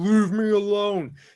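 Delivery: dragon-like monster scream. Voicing a character who screams at another to go away: screaming in Draconic. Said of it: "as you scream this in Draconic".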